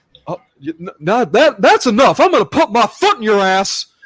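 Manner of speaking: loud, high-pitched, swooping Texas cartoon dad voice. Speakers trade cartoon voice impressions, Hank Hill impression. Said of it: "Oh, Hank Hill".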